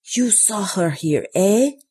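sharp, hissed, secretive, conspiratorial tone. Narrator reads an Italian woman at a campsite desk questioning a visitor: hissing. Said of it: "she hissed".

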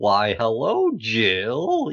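TV-presenter voice, swooping pitch, one word stretched out. Retelling a TV advert in a film: Ainsley Harriott impression. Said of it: "Was that an Ainsley Harriott impression?".

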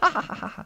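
very high, put-on triumphant ha-ha gloating laugh. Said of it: "Do you reckon he laughs like that?".

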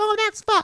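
very high, cutesy, squishy cute delivery. Showing how to say it like a squishmallow: cute squishmallow-style delivery. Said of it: "make it a squishmallow".

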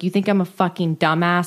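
acted, mock-furious put-on anger. After reading a mother's letter, acting out the daughter's reaction, mock-furious. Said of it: "Christina was furious at this letter because she's like".

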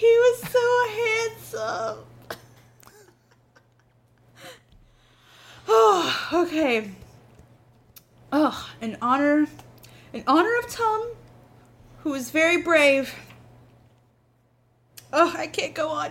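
sobbing, weeping, crying through the words. Eludra speaks in memory of Tom, Eludra weeping. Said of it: "She's just weeping".

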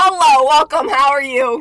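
very loud, grouchy voice. Mocking own podcast intro: Oscar the Grouch voice. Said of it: "I sound like Oscar the fucking Grouch".

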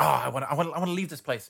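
mildly angry, fed-up, annoyed, words repeated. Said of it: "he gets a bit angry. He's like".

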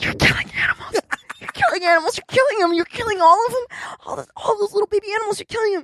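high, hushed whisper. Retelling what was said every night into a sleeper's ear: imitating a whisper. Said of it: "I would whisper in her ear".

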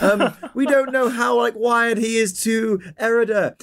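anxious, acted character voice.

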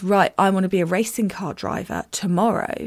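ordinary talk

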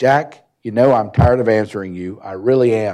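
loud, angry outburst, blowing up. Retelling how a man blew up at him over the money, retelling an angry outburst. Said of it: "he just blew up".

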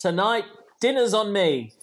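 ordinary talk, nothing marked

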